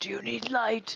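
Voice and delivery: hushed shout. Calling out to party members exploring a building: quiet yell. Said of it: "Don't yell at them".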